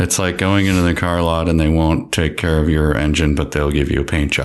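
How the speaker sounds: level, flat, unexpressive deadpan monotone. Giving a first read so someone else can then up it, flat unexpressive voice. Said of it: "I'm just going to do it in a flat voice".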